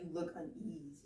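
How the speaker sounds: ordinary delivery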